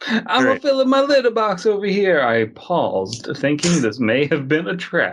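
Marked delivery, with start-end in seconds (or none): 0.1-2.2 fake Italian accent, high-pitched. Joking about a cat during a reading: put-on Italian accent. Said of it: "Is your cat putting on an Italian accent".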